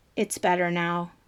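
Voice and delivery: toneless voice. A woman in a film scene speaks up after the camera zooms out, dull monotone. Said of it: "she says in a dull monotone".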